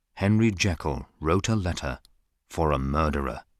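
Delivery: normal talking voice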